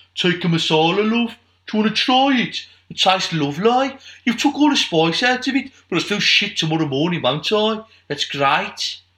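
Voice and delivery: put-on high Brummie Birmingham accent. Acting out an exchange over a masala for listeners, Birmingham accent. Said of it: "Well done on your Birmingham accent there".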